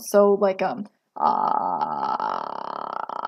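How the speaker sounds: very slow, low, creaky vocal fry. Showing what the sound sounds like while talking: vocal fry. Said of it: "You can probably hear me doing it as I speak right now".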